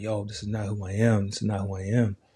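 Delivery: mock tearful, upset talking through tears. Retelling talking to an older brother on the phone, retelling talking through tears. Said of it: "I'm in tears".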